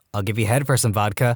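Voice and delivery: ordinary talk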